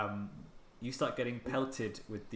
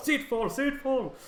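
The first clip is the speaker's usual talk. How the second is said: shouting, much higher and louder; 11 semitones higher, 9 dB louder than usual. Everyone aboard takes up the call to get below deck: shouting a warning call. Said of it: "he's shouting".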